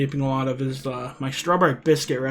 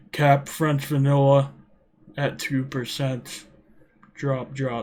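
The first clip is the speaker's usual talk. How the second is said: slow, flat, unvaried monotone drone with no inflection. Showing how a video would sound done plainly, in a flat monotone. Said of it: "a video where it's monotone".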